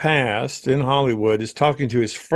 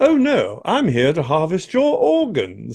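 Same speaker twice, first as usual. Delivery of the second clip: put-on British butler voice, higher pitch; 4 semitones higher than usual. Describing how the game's robots always talk: british butler voice. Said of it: "they always have that butler British".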